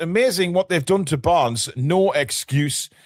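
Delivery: ordinary talk, nothing marked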